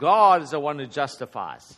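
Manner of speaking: stress on GOD. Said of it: "the emphasis is on who? God".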